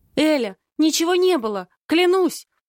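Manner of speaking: shaky, quavering, trembling high voice. Narrator reads the friend's protest to Elya after she comes out of the kitchen: trembling voice. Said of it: "говорит она дрожащим голосом".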